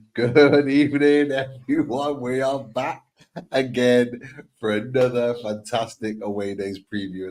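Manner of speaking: talking with held-back laughter leaking into the words. Opening a preview show while his wife and daughter dance around: laughing through the words. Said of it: "I'm just laughing because I've got my wife and my daughter dancing".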